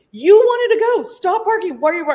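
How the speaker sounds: shrill, loud yelling, way up high. Retelling the drive home with the barking dog: retelling yelling at the dog. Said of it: "And I'm yelling at him".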